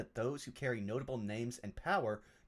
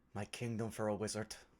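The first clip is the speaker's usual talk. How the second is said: muttering under the breath; 2 semitones lower than usual. Voicing a man too slow to follow what he read, muttering under his breath. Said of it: "he's just going to mutter under his breath".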